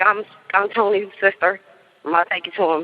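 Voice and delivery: ordinary talk, nothing marked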